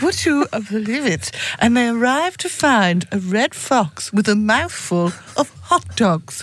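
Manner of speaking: mock-serious, posh newsreader voice. Reading out a news story about a barbecue theft, in a serious posh newsreader voice. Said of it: "do you serious posh voice then?".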